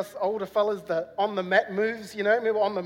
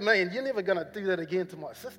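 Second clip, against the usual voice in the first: plain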